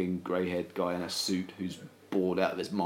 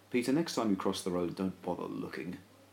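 ordinary talk, nothing marked

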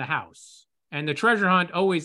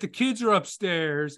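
put-on, very loud delivery; 2 semitones higher than usual. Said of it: "say very loudly".

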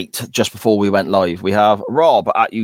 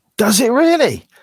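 thrilled, excited voice, pitched very high; 14 semitones higher than usual. Hearing who stars in a film, asking back, excited. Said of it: "I sound excited there".

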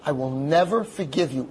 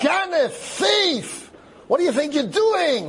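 mock very high, shrieking, drawn-out scream; 14 semitones higher than usual. Retelling how a mob leader comes over to a man, retelling a scream. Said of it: "starts screaming at him".

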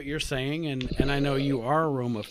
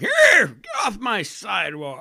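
put-on very slow, drawn-out, raised old-timer voice; 6 semitones higher, 7 dB louder than usual. Mocking another speaker who sounded old: imitating someone sounding old. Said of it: "You were like".

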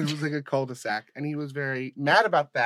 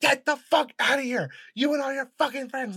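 mock very high-pitched, furious, raging blowup; 10 semitones higher, 3 dB louder than usual. Retelling how a kid who was hit by the car flipped out: imitating someone flipping out. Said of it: "he flips the fuck out".

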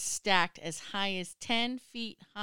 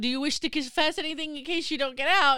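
mock, acted shouting, higher pitch; 7 semitones higher, 5 dB louder than usual. Retelling what a man shouted while helping people get out, shouting. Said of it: "he's shouting".

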